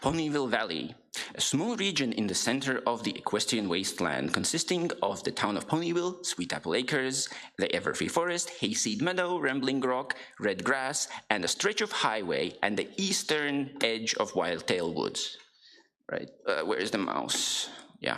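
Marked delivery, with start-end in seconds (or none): 0.0-15.4 storyteller narrator voice, read aloud to listeners. Reading a selection of game location descriptions aloud, in a narrator voice. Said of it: "narrator voice".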